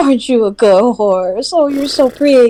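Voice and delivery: put-on high cooing baby talk. Playing a character petting a horse: baby talk to a horse. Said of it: "petting it and baby talking to it".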